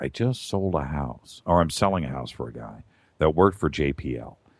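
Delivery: low, secretive half-whisper. Speaker retells what a realtor half-whispered in his ear: half-whispering. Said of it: "he whispers in my ear".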